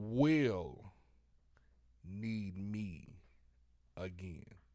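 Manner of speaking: extremely slow, drawn-out pace. Asked to repeat the last part very slowly for the people in the back: very, very slowly. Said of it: "say it very, very slowly".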